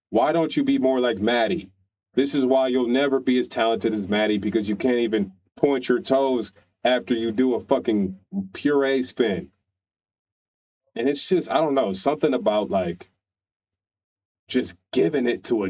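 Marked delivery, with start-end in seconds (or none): none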